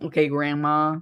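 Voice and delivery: normal talking voice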